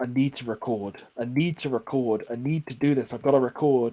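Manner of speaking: normal talking voice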